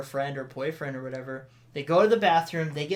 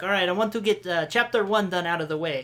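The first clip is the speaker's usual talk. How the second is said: failed, poor attempt at a Russian accent; 2 semitones higher than usual. Retelling what a teacher said in class: attempted Russian accent. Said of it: "That's not sounding Russian at all".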